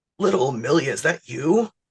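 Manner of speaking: heavy, pack-a-day smoker's voice. In a sketch, greeting someone back in town, in the Uncle Frank voice. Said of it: "I got the twenty pack a day voice".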